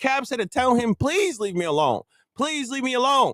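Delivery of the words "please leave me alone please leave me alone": put-on earnest, repeated pleading, begging tone. Retelling how Caps asked someone to leave him alone: imitating Caps pleading. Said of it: "pleading with them".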